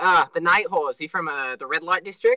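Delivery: normal talking voice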